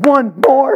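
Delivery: put-on cheeky, high, loud kid voice.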